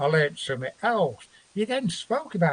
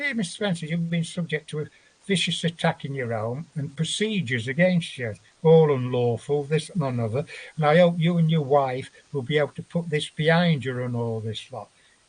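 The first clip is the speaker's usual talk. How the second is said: ordinary talk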